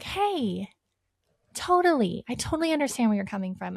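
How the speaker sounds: soft, gentle tone. Showing how the speaker talks to clients who get emotional, in a gentle voice. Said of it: "I kind of switch my tone".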